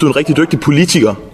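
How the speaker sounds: main strong stress on politiker. Addressing someone with a compliment: stress on politiker. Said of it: "nemlig med tryk på politikere".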